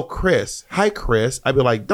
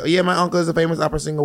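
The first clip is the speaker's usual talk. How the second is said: put-on New York accent; 4 semitones higher than usual. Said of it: "I don't know why I gave her a New York accent".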